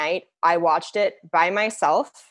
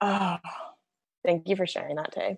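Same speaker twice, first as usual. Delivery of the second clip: soft, therapist-like voice; 8 dB quieter than usual. Responding to Tay's story, the speaker thanks Tay: sounding like a therapist. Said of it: "I sounded like my therapist".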